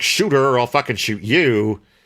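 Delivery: ordinary delivery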